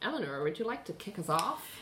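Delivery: lilting American accent with a wide pitch range.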